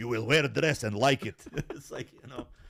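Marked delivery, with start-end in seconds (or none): 0.0-1.4 fake, put-on Russian accent. Retelling what his father said to him, in a put-on Russian accent. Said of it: "I don't know why the accent went from Eastern".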